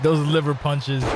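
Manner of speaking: ordinary delivery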